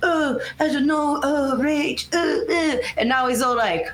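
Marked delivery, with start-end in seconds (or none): 0.0-2.8 put-on docile voice, higher and slower. Describing how a man acts around Rachel: hesitant Eric impression. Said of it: "your impressions of Eric and Rachel".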